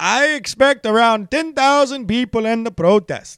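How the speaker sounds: put-on Swedish accent. Reading out a nightclub owner's quote, imitating Andreas Varnavers in a Swedish accent. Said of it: "Is that even close to a Swedish accent?".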